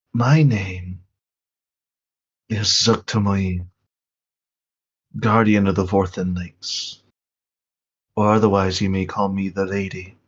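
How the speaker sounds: airy, breathy whispering voice. Voicing the Lady, heard like a whisper on the winds: whispering voice on the wind. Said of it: "like a whisper kind of flowing through the winds".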